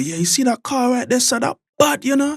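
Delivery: very high put-on Jamaican accent. Explaining slang to a parent, imitating a Jamaican accent. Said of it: "And what was that that you just said?".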